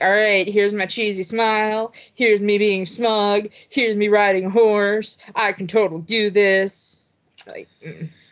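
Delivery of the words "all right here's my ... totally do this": half-hearted, zero-effort, going-through-the-motions delivery. Mocking an actor's lazy performance: imitating Chris Pratt phoning it in. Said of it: "it's so phoned in. Like, he's like".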